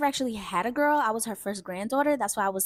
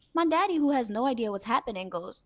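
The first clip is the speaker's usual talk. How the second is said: ordinary talk, nothing marked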